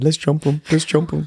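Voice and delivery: high-pitched stage half-whisper. Retelling how he urged his friends at the park, half-whispering. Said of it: "And I'm whispering to my friends".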